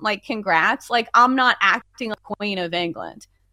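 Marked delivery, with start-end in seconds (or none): none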